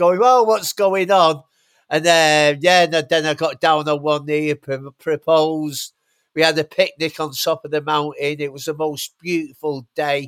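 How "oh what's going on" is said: re-enacted scream, higher, louder. Retelling the day he proposed, he quotes her reaction: retelling her screaming. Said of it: "she started screaming".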